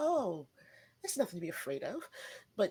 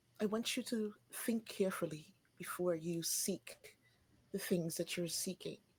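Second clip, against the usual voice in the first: hushed, close, confidential, leaning-in half whisper; 4 dB quieter than usual. Storyteller voicing a woman who leans in toward a man: whispering at him. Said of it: "kind of whisper at him".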